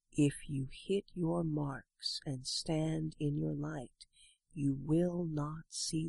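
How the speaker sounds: hushed, very soft, measured, deliberate half-whisper. Narrator reads a veteran speaking to a nervous young one: very soft, deliberate half-whisper. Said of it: "He very softly, very deliberately whispers".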